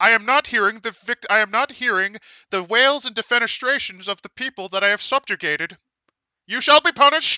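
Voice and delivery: cartoon alien voice. Playing an alien invader with a ray gun: Marvin the Martian style voice. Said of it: "playing a Marvin the Martian style character".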